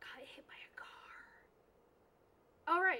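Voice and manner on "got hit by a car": hushed, barely voiced whisper, said to one side. Telling the others about Alex so Alex cannot hear: whispering. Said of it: "because I'm whispering".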